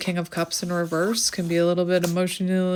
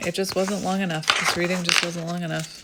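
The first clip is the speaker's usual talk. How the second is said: ordinary delivery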